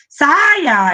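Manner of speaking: loud, stretched-out, drawn-out shout. Explaining that big letters mark a scream: shouted command. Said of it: "É um berro".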